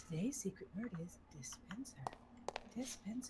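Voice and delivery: very quiet, low, hushed, under-the-breath remark. Retelling to others what you said when you first logged on, a very quiet remark. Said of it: "And so I said very quietly".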